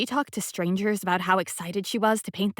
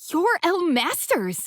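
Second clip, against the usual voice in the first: squeaky, very high exclaimed squeak; 10 semitones higher than usual. Narrator, welcomed into a kitchen, recognizes its host, squeaking. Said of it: "I squeak".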